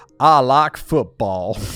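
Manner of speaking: loud, slow Southern American drawl. Imagining a sports-scholarship student among giant brains, speaking in a Forrest Gump accent. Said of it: "It's like Forrest Gump accent, isn't it?".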